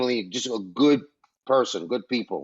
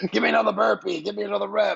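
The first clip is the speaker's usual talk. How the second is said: very high, raspy, rough screaming yell; 10 semitones higher than usual. Describing how the boy you once bounced on your knee now yells at you; imitating a coach yelling. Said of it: "he's yelling, screaming at you".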